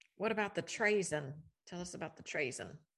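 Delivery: botched British accent slipping into Appalachian. Asking the other speaker a question, in a botched British accent. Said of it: "Did you suddenly come from the holler?".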